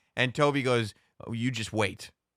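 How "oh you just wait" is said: put-on muttering, lower and quieter. Retelling a TV scene where Toby mutters a threat: imitating Toby muttering under his breath. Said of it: "he says that under his breath".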